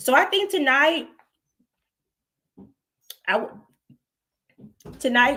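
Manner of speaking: high, sputtering choke through the words. Speaker starting tonight's talk with candy gone down the wrong pipe, choking. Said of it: "sorry, I was eating Skittles. We were down the wrong pipe".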